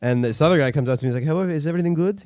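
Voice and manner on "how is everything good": put-on Eastern European accent, pitched up. Retelling another guy coming up to ask, eastern european accent. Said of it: "he seems like an Eastern European".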